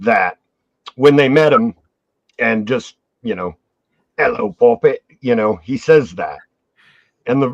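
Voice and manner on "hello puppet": put-on goblin voice with weird British accent. Retelling a goblin game character's greeting to the players: Rug Tug's weird British accent. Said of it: "a weird British accent".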